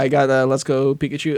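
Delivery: ordinary delivery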